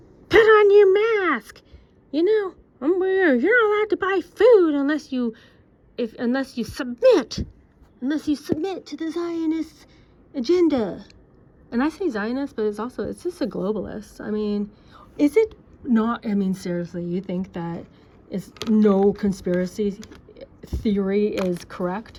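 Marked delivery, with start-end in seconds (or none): 0.3-11.0 high, loud, mocking yelling. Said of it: "Who was the one yelling".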